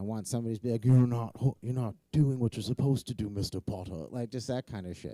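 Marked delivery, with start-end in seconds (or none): 0.8-4.1 loud, admittedly awful, unpolished character voice. Imitating the therapist he wishes for, scolding him: Severus Snape voice. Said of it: "I gotta do a better voice, and it's awful".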